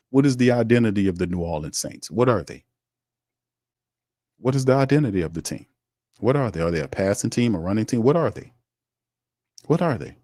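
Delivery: ordinary talk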